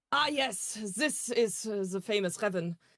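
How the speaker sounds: odd put-on German accent, very slow, drawn out. Player offering to voice random side roles, trying out a weird german accent. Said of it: "Just let me do a German German weird voice".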